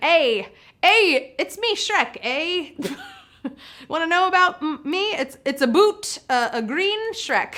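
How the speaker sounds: slow, effortful Canadian accent. Voicing what Shrek would have said, trying a Canadian accent as Shrek. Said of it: "I'm trying so hard with my Canadian accent".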